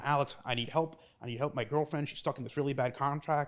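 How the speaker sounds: panicked, frantic, freaking-out, desperate voice. Retelling a phone call from a former intern: imitating a panicked caller. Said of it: "panicked, freaking out".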